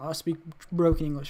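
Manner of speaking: ordinary talk, nothing marked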